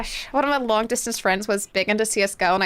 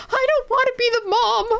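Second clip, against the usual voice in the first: acted, very high, tearful, sobbing little-kid crying voice; 14 semitones higher than usual. Retelling own words as a crying child: imitating own childhood crying. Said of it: "And I'd start crying".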